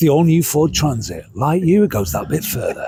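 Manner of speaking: trustworthy, man-of-the-people advert voiceover. Demonstrating a voice used in adverts to a co-speaker: trustworthy man-of-the-people advert voice. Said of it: "That is the voice of the man you can trust".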